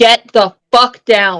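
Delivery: mom-like scolding tone. Telling cats to get down from somewhere: mom voice. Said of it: "That's the only time the mom voice comes out".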